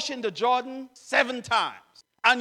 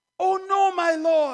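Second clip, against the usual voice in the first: fretful, high, anxious crying out; 6 semitones higher than usual. Reading a scripture passage, a young man speaks to his lord, anxious crying out. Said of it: "he cried".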